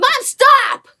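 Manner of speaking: put-on very high, loud, startled shrieking children's voices.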